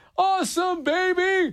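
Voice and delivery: very high, called-out sports announcer voice. Listing celebrity birthdays, doing a first-ever Dick Vitale impersonation. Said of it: "I've never done a Dick Vitale impersonation".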